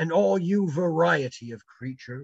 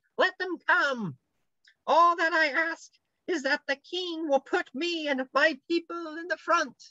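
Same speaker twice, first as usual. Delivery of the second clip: very high, small, shrill piping squeak; 11 semitones higher than usual. Narrator reading a story, voicing someone at the doctor's feet: very shrill small voice. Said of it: "Said a very shrill and small voice".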